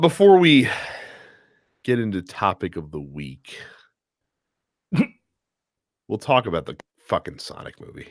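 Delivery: totally unexcited, unenthusiastic delivery. Host introduces the Sonic movie before the topic of the week, sounding unexcited. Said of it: "You don't sound excited".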